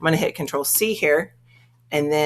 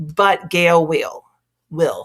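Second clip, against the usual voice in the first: Texan accent. Explaining which databases have pictures for a topic: Texas accent. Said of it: "my Texas accent came out".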